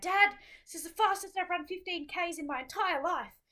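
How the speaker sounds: very high, loud shouting scream. Retelling calling out to Dad in a running pack: retelling a scream. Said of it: "just screamed out at Dad".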